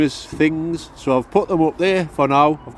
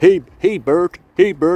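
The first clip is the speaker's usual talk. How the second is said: raised, calling cartoon puppet voice; 4 semitones higher, 6 dB louder than usual. Joking about Storm Bert, calling out to Bert: Ernie voice. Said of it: "a kinda good impression of Bert and Ernie".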